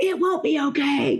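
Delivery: frantic, hysterical, high and drawn-out. Retelling a phone call about a bus on fire, imitating hysterical mom. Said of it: "She's hysterical".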